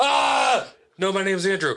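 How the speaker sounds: put-on high, screaming man's voice. Retelling a man screaming through the speakers: imitating a screaming man. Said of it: "the screaming guy's just".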